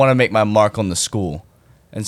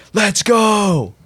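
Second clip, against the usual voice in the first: re-enacted full-lungs scream, much higher pitch; 11 semitones higher than usual. Student recalling learning they won while in class, retelling a full-lungs scream. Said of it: "on the top of my lungs".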